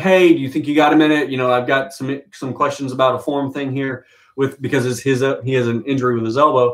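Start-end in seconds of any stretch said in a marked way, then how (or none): none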